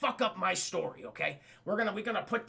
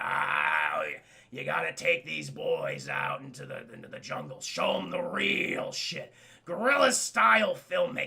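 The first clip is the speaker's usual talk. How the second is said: very low, slow, drawn-out crazed drawl. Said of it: "doing his crazy Nick Nolte shit".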